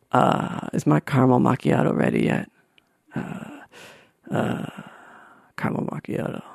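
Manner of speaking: breathy, unimpressed, muttered delivery. Imagining meeting a celebrity who only asks about his coffee: Alec Baldwin impression. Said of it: "Alec Baldwin impression".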